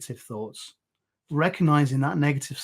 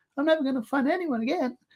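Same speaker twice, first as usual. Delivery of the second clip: very high-pitched, silly cartoon voice; 12 semitones higher, 3 dB quieter than usual. Showing how to make a negative thought ridiculous: Mickey Mouse voice. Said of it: "so it's like Mickey Mouse saying it".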